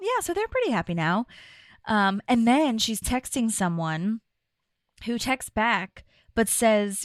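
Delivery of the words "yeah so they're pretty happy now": play-acted carefree, breezy, light, quick, no bitterness. Describing a woman's dating story, speaker retells her reply: retelling a breezy, unbitter remark. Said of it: "the way she says it is not bitter at all".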